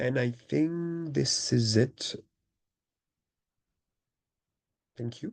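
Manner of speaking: hoarse voice, almost gone. Ending a talk with a voice almost gone from flu. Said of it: "so my voice is completely down".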